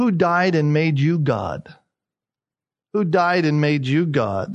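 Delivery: put-on sarcastic tone. Retelling a mother's rebuke to her sons: imitating mother's sarcastic tone. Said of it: "with a sarcastic tone in her voice".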